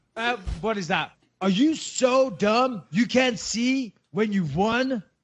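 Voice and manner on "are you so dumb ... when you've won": slow put-on American accent, like a film. Quoting a movie line and asking which movie it is: American accent. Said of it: "I love your American accent".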